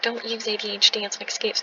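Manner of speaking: plain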